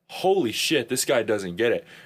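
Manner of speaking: normal talking voice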